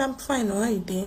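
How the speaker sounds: ordinary talk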